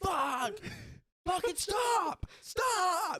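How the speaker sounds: mock yelling, very high and very slow. Retelling a patient in an ambulance: imitating a patient yelling. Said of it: "he's yelling at them".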